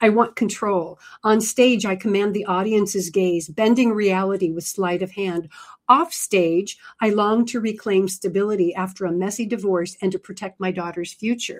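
normal talking voice

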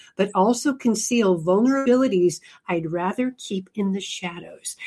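plain

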